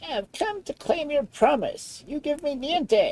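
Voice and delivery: froggy, frog-like dwarf voice. Reading a fairy tale aloud, the dwarf speaks to the king in a froggy voice. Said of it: "said the dwarf in his froggy voice".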